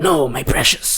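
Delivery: obsessive, possessive cave-creature whining voice. Describing someone refusing to destroy the ring: Gollum voice.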